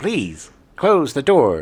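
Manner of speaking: put-on talking robot voice. Imitating an old talking car: "Number five is alive" voice. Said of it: "that weird kind of, uh, "Number five is alive" voice".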